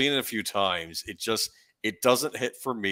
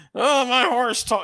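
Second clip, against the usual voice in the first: very high, loud, slow, weaselly gravelly cry; 8 dB louder than usual. Retelling a movie scene about a talking horse: Bobcat Goldthwait voice. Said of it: "I can't even do his voice justice".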